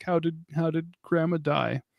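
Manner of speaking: high, weepy, tearful put-on child's voice. Retelling how her crying child asked about Grandma's death, imitating a crying child. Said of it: "She's crying, and she's like".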